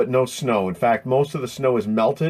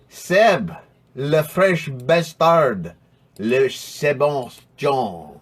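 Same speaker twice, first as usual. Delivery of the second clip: bad, fake, horribly exaggerated French accent. Calling someone to join the chat, in a really horrible French accent. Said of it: "That was a really horrible French accent".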